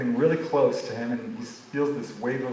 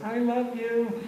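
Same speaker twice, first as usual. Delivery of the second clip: put-on very high, sweet little-girl voice; 11 semitones higher than usual. Retelling a young girl's words after her father tells her what to say, sweet little voice. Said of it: "she says in her sweet little voice".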